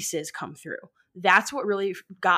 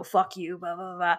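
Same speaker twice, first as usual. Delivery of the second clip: demonic, possessed-sounding voice. Describing a ghost recording that sounds like The Exorcist: Exorcist demon voice. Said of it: "It is that voice".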